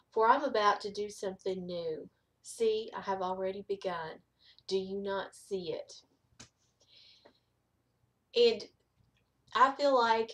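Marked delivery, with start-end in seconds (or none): none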